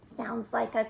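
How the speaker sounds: ordinary delivery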